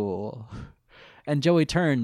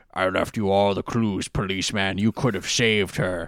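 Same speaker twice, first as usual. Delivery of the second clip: deep, disguised, voice-changer killer voice; 3 semitones lower than usual. Picturing a movie killer's call through a voice modulator: imitating a killer's disguised voice. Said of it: "I'm just picturing that call where he's like".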